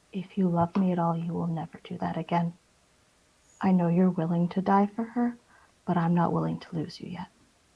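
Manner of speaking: very soft, hushed voice. A character in a tabletop game speaks to him, speaking very softly. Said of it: "she says very softly to him".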